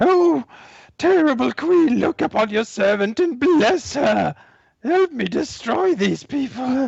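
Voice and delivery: shrill, high, shrieking cry. A game master voices Shriek calling on her queen as her minions fall, shrieking. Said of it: "she shrieks".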